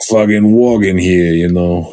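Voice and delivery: heavy, thick Italian New York accent. Speaker doing his Italian New Yorker bit, in a thick Italian New York accent. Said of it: "I was Italian New Yorker".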